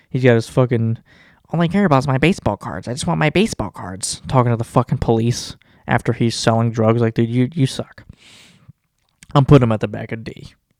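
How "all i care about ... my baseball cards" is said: dorky, nerdy geek voice. Mocking a man he says sounds like a geek, doing a geeky voice impression. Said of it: "He sounds like a fucking geek".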